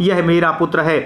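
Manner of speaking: ordinary delivery, nothing marked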